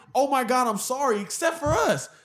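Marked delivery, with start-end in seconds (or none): none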